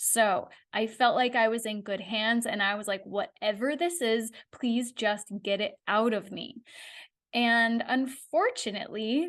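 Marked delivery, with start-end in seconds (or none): none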